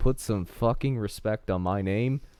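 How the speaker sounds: ordinary delivery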